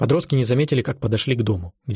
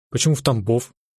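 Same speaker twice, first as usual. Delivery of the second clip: ordinary delivery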